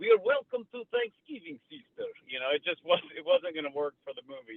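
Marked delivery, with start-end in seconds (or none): 0.0-2.1 bad, very high-pitched fake American accent. Explaining why a local actor as the brother wouldn't work for the movie: Serbian actor's bad American accent. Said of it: "an actor in in Belgrade, Serbia that could pull off a a a um a accent".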